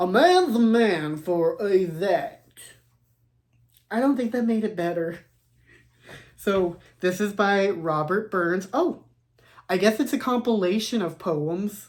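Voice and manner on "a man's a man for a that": slow, drawling put-on country accent. Rereading a book title, trying it a second way: country accent. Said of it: "Maybe I should try it with a country accent".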